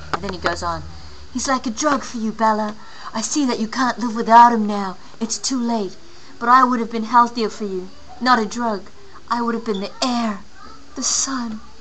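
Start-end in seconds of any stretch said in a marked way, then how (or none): 1.3-11.6 put-on husky movie-heartthrob young man voice. Quoting Jake speaking to Bella from the book; husky Jake voice. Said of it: "Husky Jake voice".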